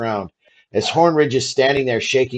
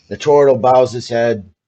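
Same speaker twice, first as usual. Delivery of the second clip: ordinary talk, nothing marked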